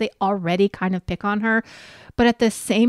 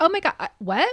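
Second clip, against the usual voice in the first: raised, high, animated voice, flustered and confused; 7 semitones higher than usual. Retelling a confrontation, quoting the other person: imitating a raised, animated voice. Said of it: "starts raising her voice and getting all animated".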